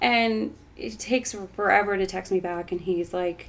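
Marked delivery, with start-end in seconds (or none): none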